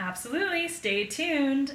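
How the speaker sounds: high-pitched nineties TV news anchor delivery. Closing a podcast episode and teasing next week, in a nineties news-station voice. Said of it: "I sound like a nineties news station".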